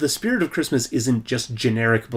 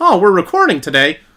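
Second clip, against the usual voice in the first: very loud, high, booming, surprised exclamation; 6 semitones higher, 9 dB louder than usual. Imitating an actor surprised at a recording day: Tom Hanks impression. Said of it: "that's kind of a Tom Hanks impression".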